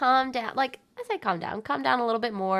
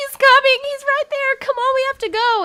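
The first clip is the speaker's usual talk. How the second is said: sobbing, crying, very high panic scream; 8 dB louder than usual. Retelling running away in panic, pulling a girl along: imitating own past crying scream. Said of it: "crying, screaming".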